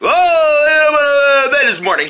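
slow teasing mock voice, drawn-out "oh". Retelling what another speaker said, in a mocking imitation of someone. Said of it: "That's not how I talk".

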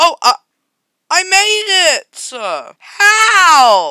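high, loud, excited shout of relief.

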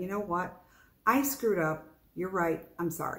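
normal talking voice

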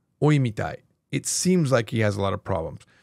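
ordinary delivery

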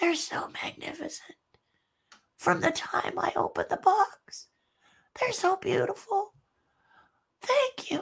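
small, hushed, almost whispered quiet voice. Retelling a call from Kevin in the hospital: imitating Kevin's quiet little voice. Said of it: "he says in a quiet little voice".

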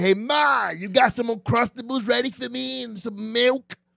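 high, creaky put-on little kid voice. Retelling how a friend walked in after school, imitating Dylan as a kid. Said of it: "what voice is that? Is that my voice?".

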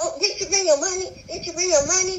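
high, rushed, hectoring scream. Retelling being lashed out at by a woman, imitating her screaming. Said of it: "she's screaming at me".

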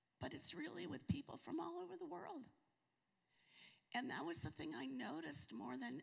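emotional, high, creaky, choked-up voice cracking.

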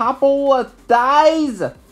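very high, loud voice with rising pitch. Jack says it's a couple of days' ride; May answers him, voice rising. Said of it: "her voice rising".

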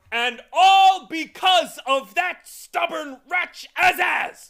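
raging bellow, very high, very loud, drawn-out. The mathemagician cuts off the humbug mid-sentence, roaring. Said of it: "Roared the mathemagician".

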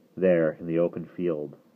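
plain reading voice

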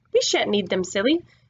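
ordinary delivery

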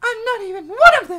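high, loud crying, protesting tone.

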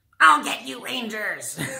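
very high-pitched, annoying voice. Showing off a toy collection, quoting her in a high-pitched Rita Repulsa voice. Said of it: "Super like high-pitched, annoying voice".

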